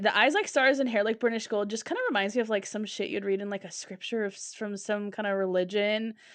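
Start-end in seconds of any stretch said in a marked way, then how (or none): none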